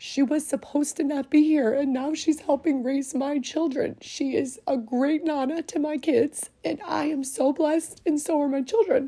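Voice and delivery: emotion welling up mid-sentence, voice catching. Speaker talking about the nana helping raise their children, getting choked up. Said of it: "So I know I'm getting choked up".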